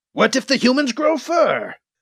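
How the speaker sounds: high, derisive, mocking voice. Reading a story aloud, voicing Rakar as he mocks Kit, mocking. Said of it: "Now I am mocking you".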